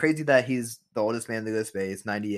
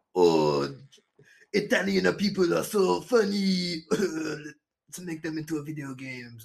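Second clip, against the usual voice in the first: slow, high, put-on Japanese accent; 7 semitones higher than usual. Voicing an imagined Nintendo game producer in the speaker's best Japanese accent. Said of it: "My best Japanese".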